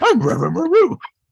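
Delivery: very high, very loud bellowing cartoon dog voice. Joking about the name Reverend Van Roo, the speaker says it as Scooby-Doo: Scooby-Doo voice. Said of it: "Scooby-Doo speaking".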